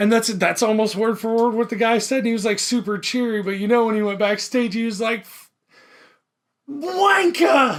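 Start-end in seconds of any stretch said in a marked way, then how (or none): 6.7-7.6 put-on very high, furious, angry shouted outburst. Retelling what a band member said backstage: imitating an angry outburst. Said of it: "you know he was mad".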